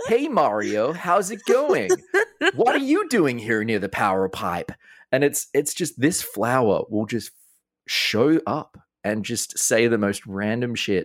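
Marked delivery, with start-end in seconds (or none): 0.1-4.7 over-the-top excited American trailer voice, high swooping pitch. Describing a flower that talks to Mario, the speaker mimics it in an overly excited Nintendo Treehouse voice. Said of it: "kind of trailer voice which is just an overly excited american dude".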